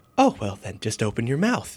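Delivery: strange, odd and eccentric voice. Retelling a film scene, imitating Johnny Depp's Wonka voice. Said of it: "And he says it, like, exactly like that".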